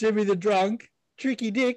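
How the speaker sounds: put-on Australian accent.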